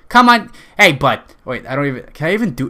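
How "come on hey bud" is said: clumsy put-on Boston accent, loud and high. Joking that a phrase sounds like a boston restaurant, the speaker tries an attempted boston accent. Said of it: "That sounds like a Boston".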